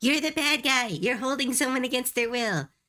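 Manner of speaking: exasperated, fed-up, high-pitched and frustrated. Retelling arguing with a villain in a game: imitating frustrated players. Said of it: "We're getting so frustrated with the villain".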